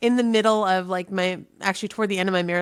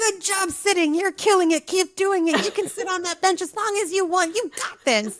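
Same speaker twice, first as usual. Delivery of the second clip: very high, patronizing, gushing, overeager encouraging tone; 11 semitones higher than usual. Answering a stranger on a bench in his own tone: mock encouraging praise. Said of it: "I respond to people in the exact same tone".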